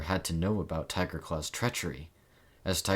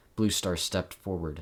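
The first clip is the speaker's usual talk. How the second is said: plain reading voice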